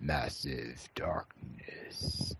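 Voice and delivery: spooky, scary, breathy whisper. A host repeats the name of a Kickstarter game: scary voice. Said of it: "that was a scary voice you just made".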